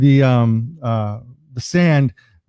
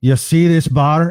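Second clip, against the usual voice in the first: slow, bad fake Scottish accent drifting toward Irish; 2 semitones higher, 3 dB louder than usual. Telling a joke, voicing the old man in the bar, in a bad Scottish accent. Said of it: "forgive my accent".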